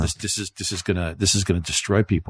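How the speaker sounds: normal talking voice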